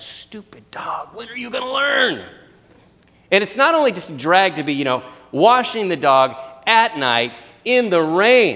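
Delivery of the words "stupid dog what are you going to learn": pitched-up grumbling mumble under the breath, to oneself. The speaker retells scrubbing the dog in the pouring rain; retelling mumbling under breath. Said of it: "I'm just mumbling under my breath".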